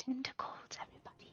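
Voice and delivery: soft, hushed whisper, very quiet, barely voiced. Speaker exploring a jungle, pointing out tentacles to everybody, whispering. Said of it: "I'm not sure why I'm I'm whispering".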